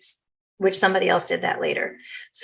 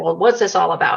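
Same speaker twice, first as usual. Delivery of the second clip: closed-off, guarded, doubting, skeptical delivery. Retelling the husband's question to the practitioner: imitating a closed-off skeptical husband. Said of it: "this real closed attitude".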